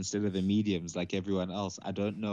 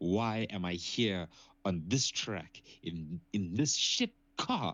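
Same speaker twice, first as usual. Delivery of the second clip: seething, worked-up emotional rant with climbing pitch. Describing a driver stuck in a bad car, imitating an emotional rant. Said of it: "he gets super emotional".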